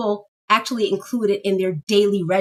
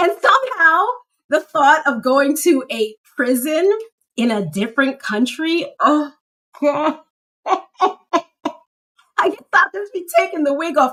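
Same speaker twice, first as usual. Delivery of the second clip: talking through high, nervous laughter; 7 semitones higher, 3 dB louder than usual. Talking about traveling to Jamaica again soon, nervous laughter while talking. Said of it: "I don't know why I'm laughing".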